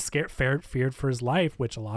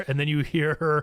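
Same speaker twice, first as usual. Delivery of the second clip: ordinary talk, nothing marked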